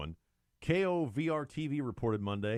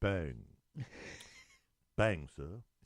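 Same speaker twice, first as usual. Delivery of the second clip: put-on British accent, much lower; 5 semitones lower, 4 dB quieter than usual. Mocking men dressed in red coats, saying their line in a British accent. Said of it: "Did they say bang in a British accent?".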